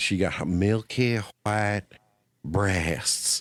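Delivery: thick, heavy country drawl, very slow. Recalling a movie scene, the speaker quotes a girl reading, deep country accent. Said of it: "with that that deep country accent".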